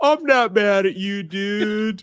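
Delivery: put-on, civil-sounding, slow passive-aggressive sarcasm, drawn-out "dude". Retelling a woman's last words, imitating passive-aggressive sarcastic talk.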